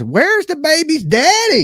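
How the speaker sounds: very high, animated, swooping put-on character voice. Asking where the baby's daddy is, in a Nancy voice. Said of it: "here in my best Nancy voice?".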